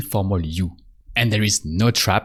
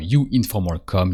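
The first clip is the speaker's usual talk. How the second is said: ordinary delivery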